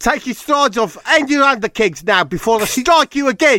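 very high, loud, shrill put-on South African accent. Retelling what an attacker said while he was on his knees: South African accent. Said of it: "He was South African".

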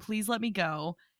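put-on pleading girl voice. Retelling a movie scene where a girl pleads to be let go: imitating a girl begging.

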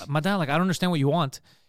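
normal talking voice

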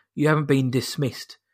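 put-on sinister voice. Retelling a line by the Imperial officer Hess: imitating a sinister officer. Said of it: "I can't do the voice".

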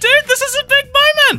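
very high, loud, eager, excited gush. Podcast co-host opening the show with his co-host, in an excited voice. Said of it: "I'm excited".

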